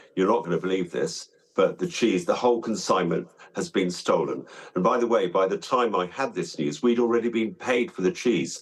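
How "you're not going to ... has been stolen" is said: ordinary talk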